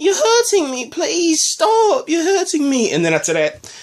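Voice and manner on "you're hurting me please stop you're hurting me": put-on very high-pitched, pleading girl voice. Retelling a scene, the speaker quotes Lady Sansa in a Sansa voice. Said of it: "obviously I had to do the voice".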